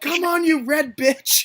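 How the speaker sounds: mock yell, shouted out at full, high pitch. Remembering what they yelled earlier, the speaker is retelling own past yell. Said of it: "I yelled".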